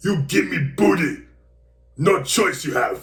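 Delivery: booming delivery, high-pitched and loud. Reading a message aloud from a writer who sounds like the Hulk: Hulk voice.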